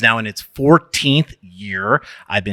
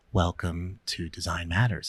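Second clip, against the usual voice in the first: put-on soft-spoken voice, lower and quieter; 3 semitones lower, 11 dB quieter than usual. Retelling how a guest greeted them on an earlier episode: imitating Debbie speaking softly. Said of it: "so you spoke very softly".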